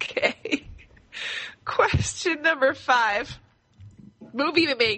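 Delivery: can't stop laughing, talking through laughter. Reading out the next question while unable to stop: laughing uncontrollably. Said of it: "I can't stop laughing".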